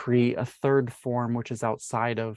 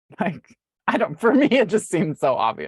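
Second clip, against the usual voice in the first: high, loud, words broken up by laughter; 7 semitones higher, 6 dB louder than usual. Explaining a view on disease, laughing while talking. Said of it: "So sorry, I'm laughing".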